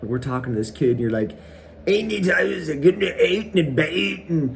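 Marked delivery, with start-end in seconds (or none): 1.9-3.9 badly done, high, fake Canadian accent. Retelling a friend's attempt at talking to a kid: imitating a bad fake canadian accent. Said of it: "you thought you could speak Canadian".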